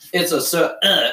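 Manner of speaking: acted burp within a word. Retelling a child's answer about a favorite shape: imitating a burp mid-word. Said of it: "I burp in the middle of it".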